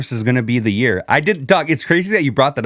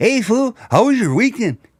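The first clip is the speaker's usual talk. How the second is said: casual, friendly tone, pitched up; 9 semitones higher than usual. Retelling how Rich brought them onto the show: imitating Rich. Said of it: "he was like".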